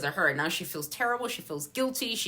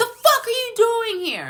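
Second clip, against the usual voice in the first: very loud, shrill, shrieking, swooping yell; 9 dB louder than usual. Retelling a true-crime story, imitating someone shouting angrily at a person who just arrived. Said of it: "Stefan's shouting at her".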